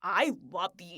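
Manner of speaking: angry, blunt, matter-of-fact delivery. Retelling how a film character confesses love, imitating angry delivery. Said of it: "He's so angry. He's furious".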